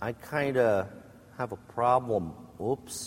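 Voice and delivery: sheepish, hesitant delivery.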